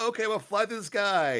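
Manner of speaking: put-on high, loud, eager kid voice.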